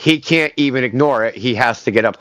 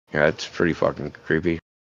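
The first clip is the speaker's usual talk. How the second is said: normal talking voice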